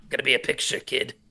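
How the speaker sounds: put-on old-school seventies smoker's voice. Answering a live-chat question about a Muppet film, in a seventies smoker voice. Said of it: "seventies smoker voice".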